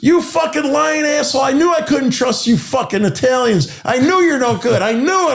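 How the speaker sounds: mock shrill, very high yelling tirade. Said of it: "when he yelled at me".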